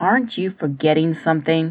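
low, patient voice. Jackson speaks to Katie lying on the grass, in a low, patient voice. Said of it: "Jackson said in a low, patient voice".

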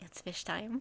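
mock very quiet, mischievous voice. Quoting a D&D character's line back to its player, imitating Valkyria, mischievous. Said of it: "with the most amount of mischief".

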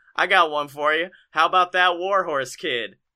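ordinary talk, nothing marked

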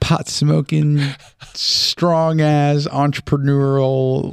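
high, slow, hyped-up bragging tone.

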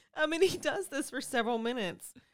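laughing through the words. Going on with a grim account after being teased, laughing while talking. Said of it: "I cannot believe I'm laughing".

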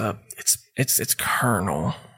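mumbled aside. Voicing General Sanders correcting his title: muttering under his breath. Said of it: "under his breath, he goes".

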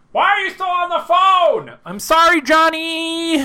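very high, very slow, drawn-out shout. Shouting on the phone in an improv scene: yelling. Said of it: "you don't have to yell that right in my ear".

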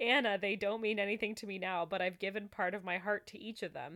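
ordinary delivery

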